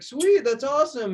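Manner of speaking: thrilled, very high-pitched excited burst. Retelling how a drafted kicker reacted to the news, imitating an excited reply. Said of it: "he was all excited".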